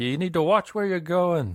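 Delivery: very high, loud shout. Playing a driver who fumbled through a sign, yelling out the window. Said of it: "So I'll yell out the window".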